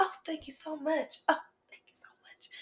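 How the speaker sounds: play-acted, very humble, hushed, rushed near-whisper. Retelling being promoted to a lead, retelling humble thanks. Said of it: "Very humbly".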